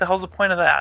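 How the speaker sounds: usual speaking voice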